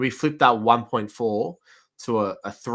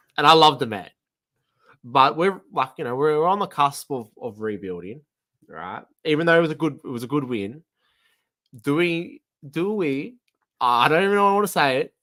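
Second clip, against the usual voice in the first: hesitant, halting speech, tripping and stuttering over words; 3 semitones higher than usual. Raising a touchy suggestion about a player he loves: stuttering a little. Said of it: "I'm stuttering a little bit".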